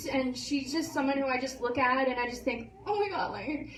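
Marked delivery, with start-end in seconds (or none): none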